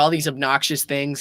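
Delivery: normal talking voice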